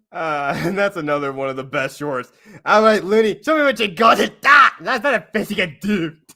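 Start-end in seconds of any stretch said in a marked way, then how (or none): 2.7-6.1 put-on Scottish accent, high and loud. Quoting a line from the short to the others: put-on Scottish accent. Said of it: "You're throwing a Scottish accent in there".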